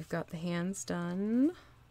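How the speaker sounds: done lifted with a questioning rise. Retelling a line she said about the hands: questioning rise on done. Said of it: "She says with a questioning voice".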